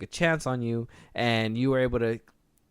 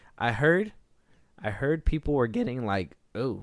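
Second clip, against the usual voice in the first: voice breaking mid-sentence. Speaking to an audience, starting a story, voice cracking. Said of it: "my voice cracked".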